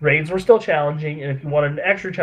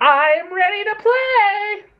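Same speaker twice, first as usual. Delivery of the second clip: put-on tiny childlike voice, very high and very slow. Describing a game boss fight, quoting the giant robot; little kid voice. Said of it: "giant killer robot with the voice of a little kid".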